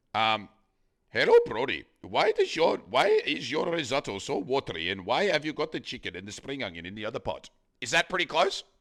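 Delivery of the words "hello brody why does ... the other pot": sing-song Indian accent with swinging pitch. Picking a character to base an Indian accent on, doing an Apu impression. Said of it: "do an Indian accent then".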